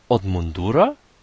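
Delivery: astonished. The youngest son, puzzled by his father's answer, asks back with a surprised question. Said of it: "zdziwił się najmłodszy synek".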